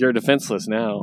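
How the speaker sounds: normal talking voice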